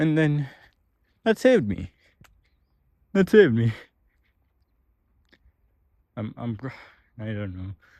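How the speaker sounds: choked-up, emotional voice. Telling viewers how shows gave hope and saved them: getting emotional. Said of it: "I'm kinda getting emotional here".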